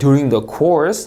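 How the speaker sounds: upward pitch lift at the end of "course". Reading a phrase that cannot end the sentence, with rising pitch on course. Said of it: "하고 올려 읽고요".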